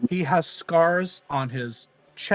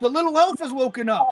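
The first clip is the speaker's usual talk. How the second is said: shrill, very high call projected loudly; 9 semitones higher, 4 dB louder than usual. Voicing a prisoner calling to others across the room: yelling in character. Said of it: "he yells over them".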